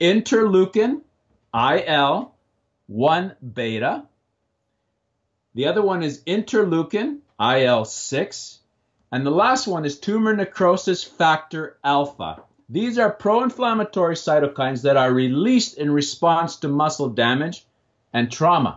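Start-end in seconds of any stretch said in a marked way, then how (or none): 0.0-12.4 slow, careful, deliberate, each term set out. Naming terms slowly so the viewers can research them; slow, deliberate. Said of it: "I say them slowly".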